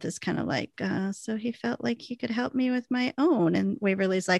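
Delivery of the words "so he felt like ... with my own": put-on quiet mutter under the breath, higher. Retelling a scene, giving Nicole's line quietly under her breath. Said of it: "quiet and under her breath".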